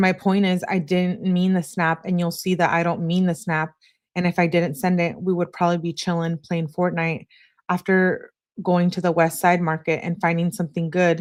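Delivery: ordinary talk, nothing marked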